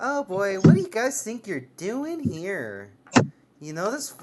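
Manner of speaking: tittering, giggly, high little fairy voice. Voicing a fairy hovering over the fire: giggling fairy voice. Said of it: "she just kinda giggles a little bit".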